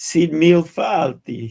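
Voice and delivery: loud, put-on Italian accent. Saying an Irish greeting about going to Ireland: Italian accent. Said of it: "I said it like an Italian guy".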